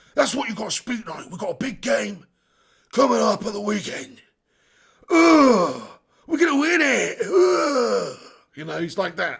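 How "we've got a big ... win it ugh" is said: slow gravelly grumble, "ugh" drawn out. Answering a viewer's request with a Sean Dyche impression. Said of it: "do a Sean Dyche impression".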